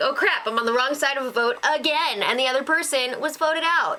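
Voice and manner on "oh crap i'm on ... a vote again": plain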